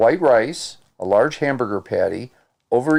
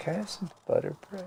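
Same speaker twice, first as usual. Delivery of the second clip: put-on very quiet, hushed, whispered child's voice; 8 semitones higher, 14 dB quieter than usual. Imitating a grandson asking for butter bread: imitating a child asking quietly. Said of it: "And he does it really quiet".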